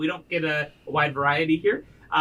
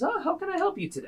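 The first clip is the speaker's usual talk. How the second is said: put-on sweet, very high kindly old woman voice; 13 semitones higher, 6 dB quieter than usual. A game narrator voices a tiefling woman greeting players in a potion shop, nice old tiefling woman voice. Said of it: "nice uh, old like tiefling woman and says".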